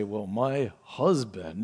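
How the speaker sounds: low, soft, scornful sarcasm dripping with contempt. Telling women how some say the word husband, imitating disdainful sarcasm. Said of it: "in the tone of voice is obvious that they're just full of disdain".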